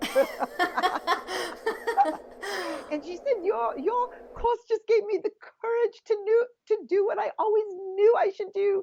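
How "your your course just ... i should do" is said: put-on high, gushing, beautiful English accent. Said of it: "She had this beautiful English accent".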